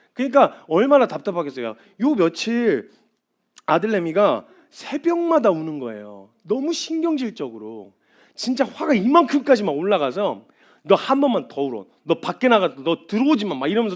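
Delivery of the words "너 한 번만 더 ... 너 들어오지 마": usual speaking voice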